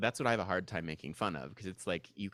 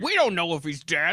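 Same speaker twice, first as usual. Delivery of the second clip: very loud, booming, high Hollywood producer voice; 8 semitones higher, 10 dB louder than usual. Joking about a studio note from a test audience, speak in a Hollywood producer voice. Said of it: "Apparently that's my Hollywood producer voices".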